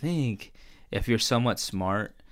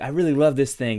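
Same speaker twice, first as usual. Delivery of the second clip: eager, thrilled gushing, high-pitched and loud; 6 semitones higher, 7 dB louder than usual. Acting out an imagined scene, imitating Mark all excited. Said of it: "all excited".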